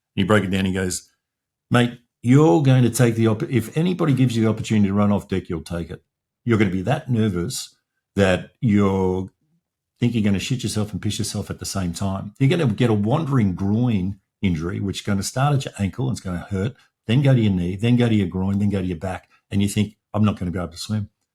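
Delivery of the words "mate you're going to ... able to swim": usual speaking voice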